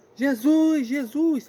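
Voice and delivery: high-pitched, loud, desperate shout.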